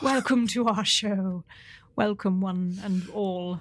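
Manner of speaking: exaggerated put-on British accent. Podcast co-host opening the show, exaggerated British accent. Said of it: "I'm doing British mode".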